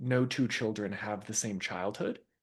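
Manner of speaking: ordinary delivery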